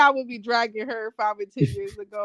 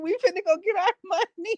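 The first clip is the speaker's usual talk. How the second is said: put-on scolding tone, higher pitch; 10 semitones higher than usual. Imitating her mom reacting to her crying over stolen money: imitating her mom scolding. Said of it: "My mom would beat my ass and go".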